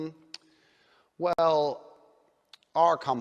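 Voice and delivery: very slow, soft, measured, unhurried, in-control delivery. Mimicking how a billionaire talks in a business meeting, talking really slowly. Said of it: "He's going to talk really slowly".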